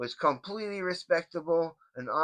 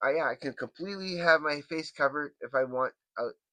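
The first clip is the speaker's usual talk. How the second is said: plain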